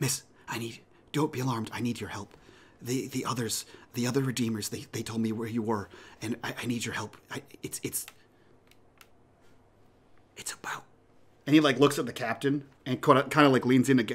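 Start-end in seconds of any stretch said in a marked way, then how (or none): 0.0-10.8 hushed whisper, quieter. Voicing a stranger leaning close at a bar: whispering. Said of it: "whispering, like, hot in your ear".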